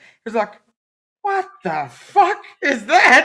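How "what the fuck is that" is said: acted, very high, very loud, drawn-out disgusted outburst. Retelling a partner's reaction to a fantasy: imitating a disgusted reaction. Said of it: "that was my partner's reaction".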